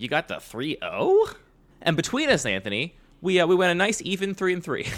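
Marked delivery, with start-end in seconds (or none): 0.0-1.3 surprised, incredulous, disbelieving tone. Showing how they would sound if actually surprised: surprised, incredulous tone. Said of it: "If I was surprised, it'd be way different. My tone would be like".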